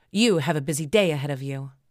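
ordinary talk

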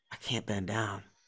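barely audible, hushed, very quiet half-whisper. Retelling what an injured fighter said: imitating a half-whisper. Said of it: "he kinda whispered it".

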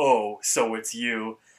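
deep, large voice. Retelling a scene where Father Time greets Mordecai, in a big low voice. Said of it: "he has a big, like, low voice".

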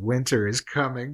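ordinary talk, nothing marked

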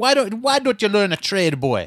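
put-on Jamaican accent, yelling. Speaker retelling a woman yelling at a man, imitating a jamaican lady yelling. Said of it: "she was yelling at this dude".

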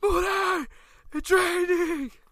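very high, loud, crazed shout. Retelling warning someone about the rain: retelling a crazy yell. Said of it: "I was yelling like that crazy".

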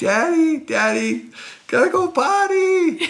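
put-on tiny child's voice, very high yelling. A father recalls his little girl calling from the stands mid-game, little kid voice yelling. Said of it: "a little voice from nowhere, it's like".

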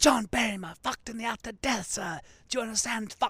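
put-on aggressive, arch British accent, pitched very high. Retelling a comedian bombing onstage, shouting into the audience, retelling arch, aggressive British accent. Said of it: "doing this really kind of arch, like, aggressive British accent".

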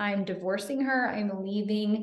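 ordinary talk

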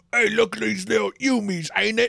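silly put-on Cockney accent, loud and high. Imitating how they're always depicted, with a goofy Cockney accent. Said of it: "they all have like the weird Cockney accent and stuff".

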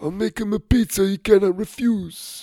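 very high, scratchy, hoarse, raspy voice. Narrating Mario's reply to a grandparent asking for help with a grandson; raspy voice. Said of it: "he said in his raspy voice".

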